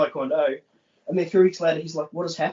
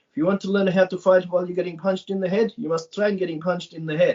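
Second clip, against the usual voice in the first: exaggerated Eastern European accent, higher pitch; 3 semitones higher than usual. Retelling what a Croatian woman at Krav told them early on: Boris and Natasha voice. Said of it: "in that Boris and Natasha voice".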